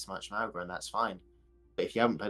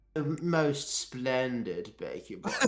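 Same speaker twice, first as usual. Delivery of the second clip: put-on, fake posh accent; 3 semitones higher than usual. Answering as the man asked about his big win, posh impression. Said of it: "he does not sound like that".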